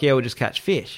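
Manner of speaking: usual speaking voice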